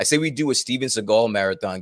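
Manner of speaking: ordinary talk, nothing marked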